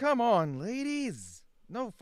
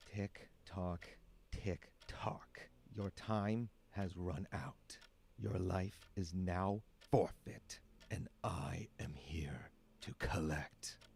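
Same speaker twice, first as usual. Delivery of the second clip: menacing, ominous, breathy whispered demon voice; 14 semitones lower, 12 dB quieter than usual. Voicing a demon that has come to collect a soul: ominous demon voice. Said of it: "It's giving demon collecting your soul".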